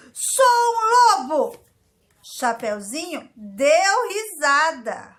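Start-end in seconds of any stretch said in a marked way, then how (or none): 0.2-1.6 very loud, very high, shrill, booming wolf shout. Reading a story aloud, the wolf tries again to scare the unimpressed girl: shouting wolf. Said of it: "E ele gritou".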